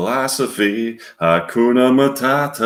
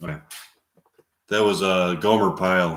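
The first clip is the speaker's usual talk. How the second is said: ordinary talk, nothing marked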